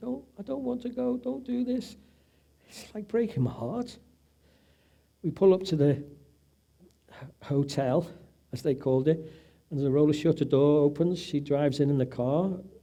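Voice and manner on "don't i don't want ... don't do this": mock crying and pleading, very high-pitched and tearful. Retelling his wife pleading from the car: imitating his wife crying. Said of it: "she's looking at me crying and saying".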